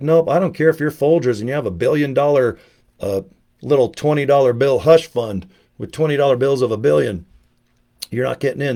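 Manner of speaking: normal talking voice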